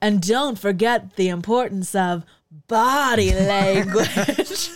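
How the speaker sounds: very slow, drawn-out character voice, every word stretched. Quoting a line from the movie: imitating Ursula. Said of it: "because then Ursula says".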